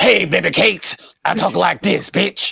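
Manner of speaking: rough, cheesy dub-style voice. Praising an anime's English dub, imitating the English dub voice. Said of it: "because he had that voice".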